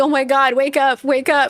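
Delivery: put-on panicked, frantic, freaking-out outburst. Retelling a bad dream, imitating how he freaked out. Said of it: "And I'm freaking out like".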